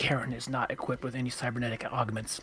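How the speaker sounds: very quiet, leaned-in, close whisper. A character leans over toward another character: whispering. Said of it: "leans over towards Patty and just whispers".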